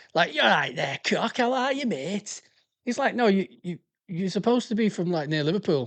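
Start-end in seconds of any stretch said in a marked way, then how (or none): 0.4-2.5 put-on strong, broad Lancashire accent, laid on. Describing how people from Saint Helens talk, put-on deep Lancashire accent. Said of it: "sound like they're from proper deep Lancashire".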